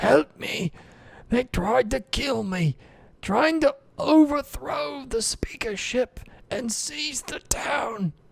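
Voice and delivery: feeble, weak, very high-pitched voice. Game master voicing Shandar calling for help from beyond the temple, weakened voice. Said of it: "you hear Shandar's weakened voice".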